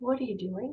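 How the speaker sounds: murmured, very quiet, hushed, barely there. Retelling a tense street standoff, leaning toward a kid: retelling speaking very quietly. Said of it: "And I said very quietly".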